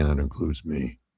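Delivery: mock muttering under breath. Retelling a coach's aside in press conferences: imitating a mutter under his breath. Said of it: "under his breath saying".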